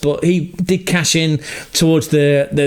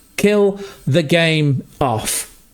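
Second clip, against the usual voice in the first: slow, drawn-out, insistent urging tone. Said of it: "Just kill the game off".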